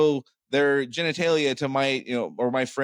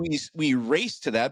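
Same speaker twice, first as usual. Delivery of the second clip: ordinary talk, nothing marked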